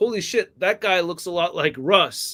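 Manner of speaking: usual speaking voice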